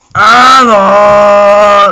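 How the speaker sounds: loud sobbing cry.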